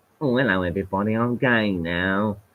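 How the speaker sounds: put-on camp voice.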